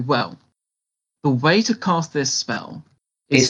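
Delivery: very serious, grave, solemn tone. Explaining how to cast a spell in character, very serious and solemn. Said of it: "I make a very serious pose and I say".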